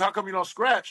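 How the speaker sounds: normal talking voice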